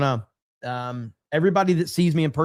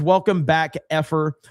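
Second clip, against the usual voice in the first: ordinary delivery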